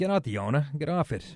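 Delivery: ordinary talk, nothing marked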